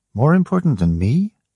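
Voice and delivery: mild, gentle voice with rising pitch. A woman asks a man who insists on his journey, softly. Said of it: "Ellen said softly".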